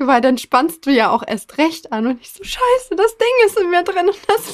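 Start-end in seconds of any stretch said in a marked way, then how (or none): 2.4-4.1 very high, frantic, panicked outburst. Retelling the moment the chain broke off: re-enacting panic. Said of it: "ich voll in Panik".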